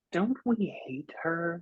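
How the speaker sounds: gentle, high-pitched half-whisper. Role-play player sending a thought into Lark's head as a psychic half-whisper. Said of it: "Like into Lark's whispery head".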